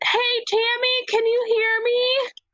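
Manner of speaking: shrill, high-pitched yell. Calling down through the floor to someone below, in character: yelling. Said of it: "I'm gonna yell".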